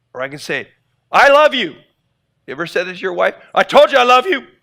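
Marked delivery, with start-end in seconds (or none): 3.6-4.4 annoyed, irritated, raised, angry insistent delivery. Showing how tone changes meaning, the speaker says it mad: angry, irritated tone. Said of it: "Even though you're mad at them".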